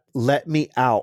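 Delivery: normal talking voice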